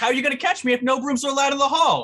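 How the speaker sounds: very high, loud, cheeky, defiant shout. Player's character answers a teacher banning brooms in the hall, shouting back. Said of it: "I shout back".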